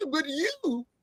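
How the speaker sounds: poor, high, soft mocking impression of a voice.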